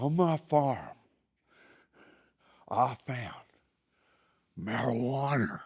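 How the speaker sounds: play-acted winded huffing, puffing like a steam engine. Retelling what a man said when he came in, imitating huffing and puffing. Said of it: "he came in huffing and puffing".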